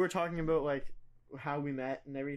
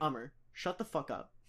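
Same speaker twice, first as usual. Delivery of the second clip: put-on annoyed tone, quieter; 2 semitones lower, 4 dB quieter than usual. Retelling a mother coming downstairs at a late sleepover: imitating mom's annoyed tone. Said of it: "that was the tone".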